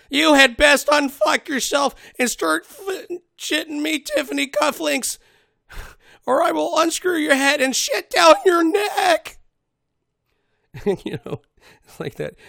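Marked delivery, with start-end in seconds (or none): 0.1-9.3 put-on shrill, very high, very loud, unsure shop-kid voice. Doing the drill instructor's lines, the speaker switches to a store clerk voice. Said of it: "like the clerk at the store".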